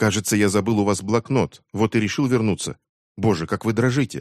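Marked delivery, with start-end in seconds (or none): none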